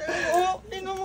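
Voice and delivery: tearful crying with voice breaking.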